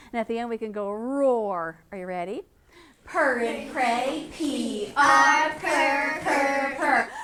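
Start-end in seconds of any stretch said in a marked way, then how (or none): 3.0-7.1 slow, drawn-out, bear-like voice. Leading a sound exercise, saying the sounds like a bear. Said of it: "we are going to be a bear".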